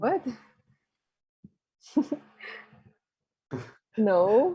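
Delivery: slightly shaky voice with a small tremble. Voicing a character answering a question about a crazy woman: slightly shaky voice. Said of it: "he says in a slightly shaky voice".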